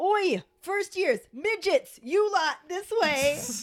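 mock very high shouted yell. Recapping a Harry Potter scene, Ron calls to the first years: retelling Ron Weasley yelling. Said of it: "he stands up and starts yelling".

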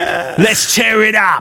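very high, very slow taunting Cockney accent. Performing video game character taunts on request: cockney accent. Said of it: "You're a good Cockney".

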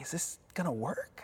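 very quiet, hushed whisper under the breath. Retelling a wife's question about the Uber driver: imitating a whisper. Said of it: "My wife kinda whispers to me".

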